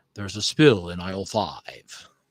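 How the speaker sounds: very low-pitched robot leader voice. Suggesting a replacement for a generic computer voice, doing an Optimus Prime voice. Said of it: "sound of Optimus Prime, and then I was kind of doing one".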